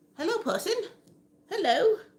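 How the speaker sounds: very high-pitched, put-on British accent. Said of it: "I just went really British there for a second".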